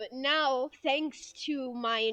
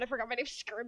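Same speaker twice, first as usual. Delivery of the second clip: ordinary talk, nothing marked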